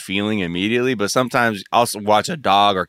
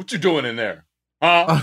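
put-on old man voice, higher; 7 semitones higher than usual. Retelling how they talk to their cat: talking like an uncle or grandfather. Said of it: "like, uncle or grandfather and being like".

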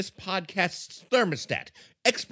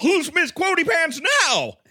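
huffy, puffing, very high voice; 11 semitones higher, 6 dB louder than usual. Redoing a line to sound like Don Knotts: huffy Don Knotts impression. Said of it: "I got to huff and puff and go".

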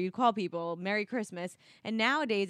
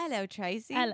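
botched, put-on Australian accent; 2 semitones higher than usual. Podcast host greeting her co-host at the start, fake Australian-sounding accent. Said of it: "That's fucking Australian".

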